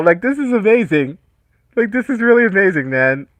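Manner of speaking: choked up, fighting tears, overcome. Thanking viewers for donations while holding back tears. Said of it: "I'm trying to hold back tears right now".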